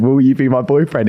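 ordinary delivery

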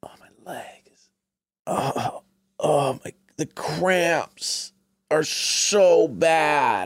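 play-acted, drawn-out, very slow, high pained tone. Describing her stalling at bedtime, the speaker is imitating her mock pain. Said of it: "she's like wrenching in pain".

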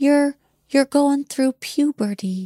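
fond, adoring tone. Retelling a remark overheard in a hallway, imitating Hef saying it adoringly. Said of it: "he said it like it was the cutest, most appealing thing".

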